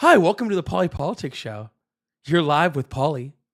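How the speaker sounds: put-on phone customer-service voice. Host showing how they'll greet callers on the show, in a customer service voice. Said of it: "I'll put on like full customer service voice".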